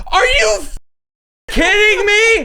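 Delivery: put-on very high, shrill, exasperated, furious yell. Recalling embarrassing others by yelling in support, retelling a yell. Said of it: "I yelled".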